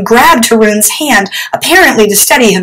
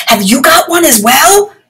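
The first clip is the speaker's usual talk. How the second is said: high, urgent, pleading stage whisper; 6 semitones higher than usual. Haroon answers the water genie near the Chupwalas, whispered. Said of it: "Haroon whispered".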